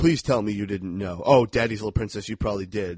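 ordinary talk, nothing marked

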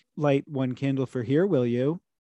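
faux-solicitous, pointedly sweet, passive-aggressive tone. Imitating a religious person's faux-solicitous manner: mock faux-solicitous passive-aggression. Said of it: "faux solicitous in that like almost passive aggressive way".

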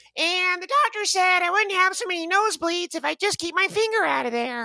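very high, squeaky voice as high as possible. Speaker tries the Ralph Wiggum voice they used to do well. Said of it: "So I used to be able to get high".

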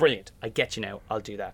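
ordinary talk

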